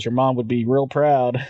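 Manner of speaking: ordinary talk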